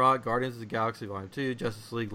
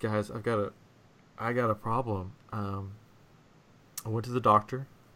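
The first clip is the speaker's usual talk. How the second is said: very serious delivery, quieter; 3 semitones lower, 5 dB quieter than usual. Retelling how a friend announced a doctor visit: imitating a friend being very serious. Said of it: "she was very serious".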